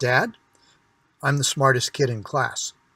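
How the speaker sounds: put-on, very serious little-boy voice. Retelling a son's words, imitating a serious young boy. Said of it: "says this very seriously".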